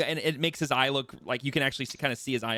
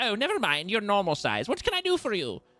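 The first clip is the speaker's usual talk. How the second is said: little gnome voice, high and sing-song; 8 semitones higher than usual. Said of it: "and goes".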